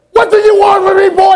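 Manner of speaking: shrill, very high, loud, fed-up screaming yell. Telling how he called his mother as a boy, he acts out her reply: imitating mother screaming. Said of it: "She just starts screaming".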